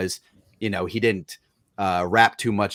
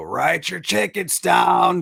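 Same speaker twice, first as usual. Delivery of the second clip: rough, raspy, gravelly, very high call; 10 semitones higher, 3 dB louder than usual. Retell what the former Phillies clubhouse guy said every morning, in Frank Kopenbarger's gravelly voice. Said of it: "in his gravelly voice go".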